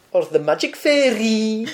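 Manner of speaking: very high, slow, drawn-out Scottish accent. Imitating a man the listener mentioned earlier, in a Richard Herring Scottish accent. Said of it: "is that your Scottish accent?".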